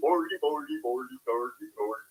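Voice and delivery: fake Swedish-sounding gibberish. Ranting about what shows can't air anymore, doing Swedish Chef gibberish. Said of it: "the Swedish chef on there anymore that just goes".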